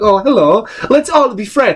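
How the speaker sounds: put-on Swedish accent, pitched high. Introducing his own character, a big Swedish elf, in Swedish elf voice. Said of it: "He's a fucking big Swedish elf".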